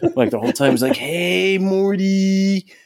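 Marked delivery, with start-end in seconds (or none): 1.0-2.6 put-on very high drunk voice, one word drawn out. Describing the pilot episode, imitating drunk Rick. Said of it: "he's just fucking slammed".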